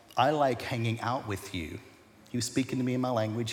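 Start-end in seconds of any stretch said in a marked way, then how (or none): 0.2-1.8 soft, hushed stage half-whisper. Retelling the words God half-whispered to him in that season: retelling a half-whisper. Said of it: "the words that he whispered to me".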